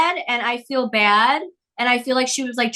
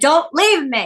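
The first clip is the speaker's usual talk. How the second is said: put-on hysterical sobbing, clinging tone; 2 semitones higher than usual. Recalling holding the dog Rocky while watching TikTok videos, imitating own hysterical crying. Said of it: "hysterically crying and I'm holding Rocky crying".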